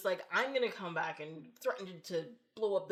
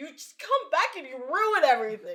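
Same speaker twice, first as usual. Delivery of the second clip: mock, high, very loud blubbering crying outburst; 7 semitones higher, 11 dB louder than usual. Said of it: "he's, like, crying".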